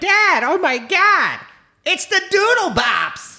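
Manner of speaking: squeaky helium voice, very high and loud. Father retelling what his child said on finding the Doodle Bops: imitating a helium voice. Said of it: "She sounds like she took helium".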